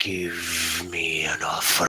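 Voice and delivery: very low, rumbling dragon creature voice. Voicing a creature that repeats itself once the spell is cast, low, rumbling dragon voice. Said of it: "it speaks in this low, rumbling voice".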